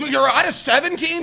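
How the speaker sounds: put-on surprised, caught-off-guard little old lady voice. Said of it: "she's like".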